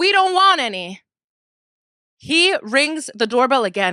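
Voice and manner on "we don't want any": very loud, high, shrill scream. Retelling screaming from the floor at a boy selling cookies, retelling a scream. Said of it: "I screamed it from the floor and I said".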